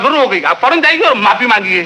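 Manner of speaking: ordinary delivery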